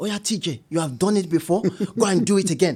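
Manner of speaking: put-on speaking in a Nigerian accent. Quoting the speaker's mum after a failed business, in a nigerian accent. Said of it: "my mum said in a Nigerian accent".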